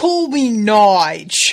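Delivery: put-on very loud, terrible British accent, one word drawn out. Recalling a comedy episode, imitating Jeff's terrible British accent. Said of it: "His terrible British accent".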